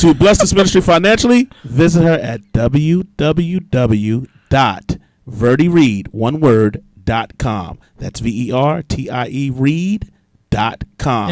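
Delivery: on-air radio announcer voice. Closing a ministry segment, the speaker reads out a website in a radio announcer voice. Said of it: "That was my radio voice right there".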